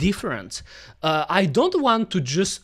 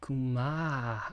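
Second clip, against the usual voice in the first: put-on horny voice, lower and much quieter; 5 semitones lower, 10 dB quieter than usual. Asked to say a word in a horny voice, trying it out: horny voice. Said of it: "say Kuma with a horny voice".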